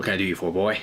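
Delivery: sly, sketchy, shady dealer voice. Voicing a shady dealer greeting a player: Shady Rick voice. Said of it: "a shady dude named Shady Rick".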